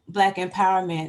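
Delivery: plain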